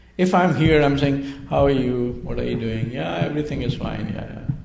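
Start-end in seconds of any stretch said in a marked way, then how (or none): 1.5-4.5 level, expressionless, flat, unvaried monotone. Demonstrating a monotone way of speaking to others, flat monotone. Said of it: "do you see it's a monotone kind of thing?".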